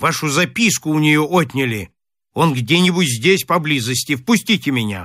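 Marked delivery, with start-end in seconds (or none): none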